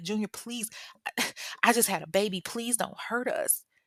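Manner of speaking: frightened, high-pitched pleading and begging. Retelling how a frightened new mother begged a man demanding car keys, acting out a scared plea. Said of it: "she's scared".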